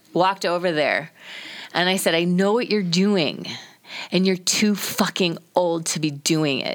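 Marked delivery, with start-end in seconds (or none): 2.2-6.8 mock choked-up voice, holding back tears. Retelling confronting strangers while fighting tears: imitating holding back tears. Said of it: "I'm goat woman because I'm trying not to cry".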